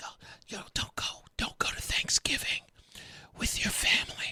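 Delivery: very quiet, breathy, hushed whisper. Retelling what a woman whispered to people, whispering like Joy Reid. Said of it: "she's whispering to people".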